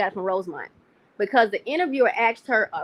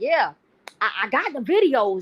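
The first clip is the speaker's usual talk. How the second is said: put-on fired-up, worked-up, slow, high-pitched voice. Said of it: "she was piped up".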